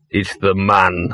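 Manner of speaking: growled voice. Narrating a story: as a man calls from the alley, one character warns another, growled. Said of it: "growled Gaspard".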